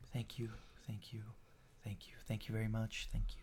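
very soft, fast, whispery, hushed near-whispered murmur. An announcer introduces a fighter who walks out very calmly: Master Hajime, very soft-spoken. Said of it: "very soft spoken".

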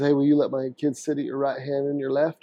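ordinary talk

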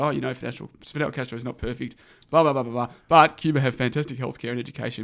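ordinary delivery

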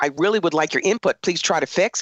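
ordinary delivery

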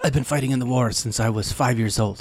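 put-on gentle, soft Spanish accent. Discussing a character, the speaker quotes what he said: Cassian impression, Spanish accent. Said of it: "but that was actually pretty good Spanish accent".

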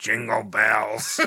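mock creepy, demonic cat voice. Retelling a man's claim that a cat spoke to him, imitating a creepy demonic voice. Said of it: "he heard the cat say in a creepy voice".

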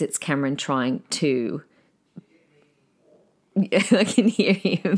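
talking through laughter. Explaining a loud voice in the background, laughing while talking. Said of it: "I'm just laughing to myself".

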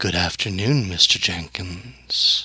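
gentle, confident voice. Game master voices a voice in a player's head greeting his character, soft but assured. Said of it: "a very soft but very assured voice say".

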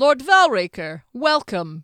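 authoritative, commanding hail. Reading the guard captain hailing the Duke of Eckert: authoritative voice. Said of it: "he called in an authoritative voice".

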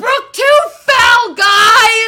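very high, very loud shrieking at top of lungs. Recalling a favorite moment as they came out of the house, retelling someone's scream. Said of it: "Wonderful was literally screaming".

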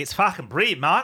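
failed put-on Australian accent. Mimicking how a man pronounces brilliant, bad australian accent. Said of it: "That sounded not even remotely Australian".

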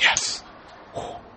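very soft, close ASMR-style whisper.

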